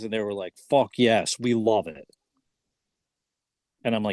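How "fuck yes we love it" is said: usual speaking voice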